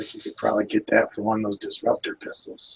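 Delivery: hushed whisper under the breath. Playing a character in a game, leaning over to another character, whispering. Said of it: "I whisper to Snake Eyes".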